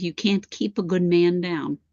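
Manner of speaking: put-on laughing while talking. Relaying a message from a man who laughs: imitating someone laughing while talking.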